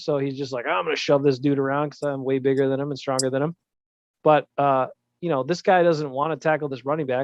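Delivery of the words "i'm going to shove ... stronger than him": usual speaking voice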